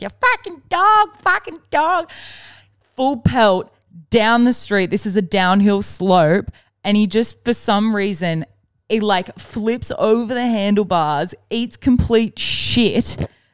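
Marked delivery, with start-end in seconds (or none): 0.0-2.1 put-on shrill, very high screaming. Retelling a man on a bike yelling at the cops: imitating a man screaming. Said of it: "you could tell that he's screaming out".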